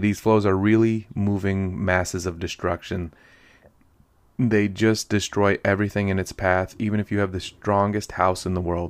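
ordinary delivery

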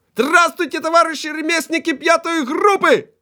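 brisk, very high, thin, cheerful little-voiced shout. Reading a story, the narrator voices a master greeting the group, cheerful thin high shout. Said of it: "бадьорим тоненьким голоском крикнув".

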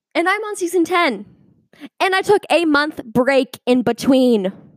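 shouting at the top of the voice, really loud, high. A speaker addresses their audience, yelling really loud. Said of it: "I probably just like yelled really loud".

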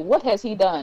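ordinary talk

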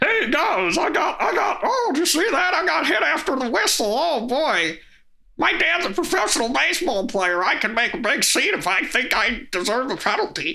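bad, crybaby frog-puppet voice, very high pitch. Mocking a player who complains about penalties: terrible Kermit the Frog voice. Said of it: "terrible Kermit".

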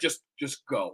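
soft words breaking up in laughter. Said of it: "I literally started laughing".

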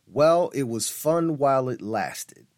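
ordinary delivery

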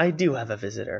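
plain

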